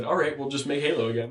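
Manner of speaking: normal talking voice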